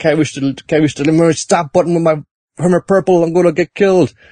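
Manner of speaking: high, frantic, panicked, freaking-out voice. Retelling a character stuck on an escalator: Joseph Joestar freaking out. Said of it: "Joseph's freaking out".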